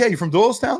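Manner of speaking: very high-pitched loud holler. Telling of spotting people wearing a logo, retelling a yell across the street. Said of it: "I'm like yelling at someone across the street".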